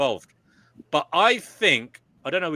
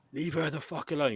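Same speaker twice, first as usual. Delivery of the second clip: put-on aggressive yell, thrown out as forcefully as possible; 3 semitones higher, 7 dB quieter than usual. Retelling yelling at a man slapping a woman: imitating own aggressive yell. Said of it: "in as fucking aggressive voice as I could muster".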